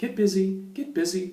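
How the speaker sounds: high-pitched, squeaky, repeated call. Recalling telling the dog to use the bathroom, in a high-pitched voice. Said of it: "I said it like in a high pitched voice".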